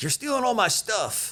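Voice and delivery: play-acted pissed-off griping, very high-pitched. Retelling how a contractor reacted to his armor being taken: imitating an angry man. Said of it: "gets all pissed off and is like".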